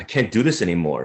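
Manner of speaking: ordinary delivery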